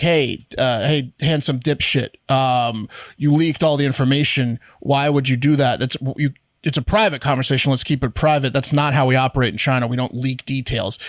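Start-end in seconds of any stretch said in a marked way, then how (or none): none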